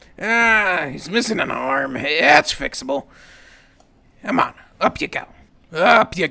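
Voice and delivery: a little scratchy, rasped out. Storyteller voices a character given little water, in a scratchy rasping voice. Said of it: "His voice is a little scratchy from, ... He rasps out".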